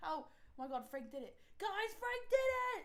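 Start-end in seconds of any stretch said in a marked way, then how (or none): 1.6-2.9 loud, excited, high-pitched shouting. In a roleplay scene, a character calls out to the group, screaming in the street. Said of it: "You're screaming in the middle of the".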